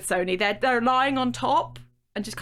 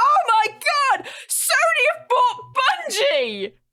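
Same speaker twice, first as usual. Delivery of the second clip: mock shrill, very high, swooping top-of-the-lungs shriek; 5 dB louder than usual. Telling a story, the speaker re-enacts screaming the news at the person they waited for, retelling a scream. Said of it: "I screamed at the top of my voice".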